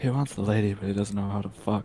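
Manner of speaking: quiet mumbling under the breath. Voicing a character who mutters about another: mumbling under his breath. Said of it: "mumbles under his breath".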